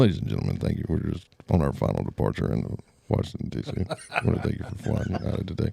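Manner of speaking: breathy, hushed half-whisper in a pilot voice. Asked for his best pilot voice, he gives a cabin announcement: airline pilot voice. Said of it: "Best pilot voice".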